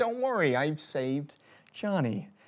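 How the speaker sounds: soft, hushed sci-fi computer voice. Retelling a computer speaking to an audience: HAL 9000 voice. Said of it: "sort of Hal, uh, two thousand and one Odyssey voice".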